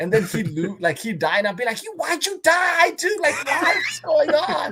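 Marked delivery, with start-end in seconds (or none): 1.8-4.7 very high, stretched-out, drawn-out shouting. Retelling reacting when his son dies in the game: imitating own shouting. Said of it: "just shouting at the kid".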